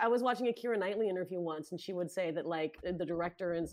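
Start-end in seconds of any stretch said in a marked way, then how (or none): none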